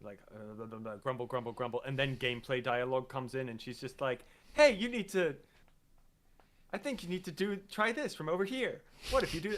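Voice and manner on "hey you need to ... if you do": mock sunny, really happy tone, bright and pitched high. Retelling a character's gameplay hint lines: imitating her sounding really happy. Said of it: "she sounded, like, really happy".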